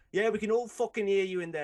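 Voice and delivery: put-on northern man voice. Speaker retells an argument in a game shop, imitating a northern guy. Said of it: "And he's like".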